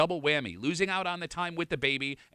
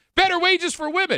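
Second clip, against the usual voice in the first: very loud, shrill, high, emphatic exclaiming; 9 dB louder than usual. Reading out Stephanie's Instagram message: read as an exclamation. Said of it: "It's an exclamation point, so I'll read it that way".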